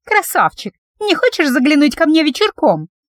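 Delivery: tiny, high, squeaky little voice. Narrator reads a bold townswoman calling to the man on the royal horse, squeaky little voice. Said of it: "проговорила она писклявым голоском".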